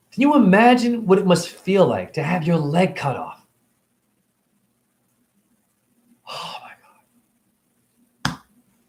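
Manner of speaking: emotional, voice catching. Ranting about eating animals, asking where people's compassion is: getting emotional. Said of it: "I'm getting emotional".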